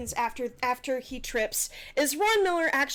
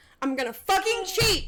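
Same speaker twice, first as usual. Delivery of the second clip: high, pitched-up, shouted yell; 7 semitones higher, 4 dB louder than usual. Interrupting a group discussion during a game: yelling. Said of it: "Sorry, no yelling, no yelling".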